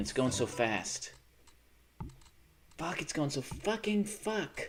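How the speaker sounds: panicked, losing-it delivery. Playing a fast game that is going badly: panicking. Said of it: "I'm panicking".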